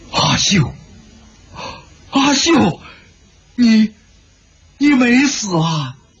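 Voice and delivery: overjoyed cry, high and drawn out. A character calls out to a girl by name, overjoyed. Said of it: "白万剑大喜".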